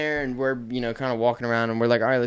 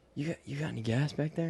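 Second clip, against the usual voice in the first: put-on nervous voice, higher and quieter; 2 semitones higher, 9 dB quieter than usual. Retelling a customer asking the store clerk a question, imitating a nervous customer. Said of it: "He's like all nervous or whatever".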